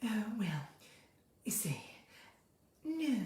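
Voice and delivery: very quiet, soft, breathy voice. Doing an impression of Sarah Lancashire when asked: breathy Sarah Lancashire voice. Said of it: "She's quite breathy".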